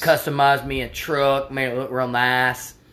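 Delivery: put-on hillbilly good-ol'-boy voice. Chatting about a driving game, slipping into a redneck voice. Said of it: "I gotta stop the redneck voice".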